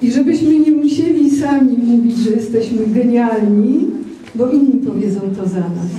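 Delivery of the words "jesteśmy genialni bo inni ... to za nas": ordinary delivery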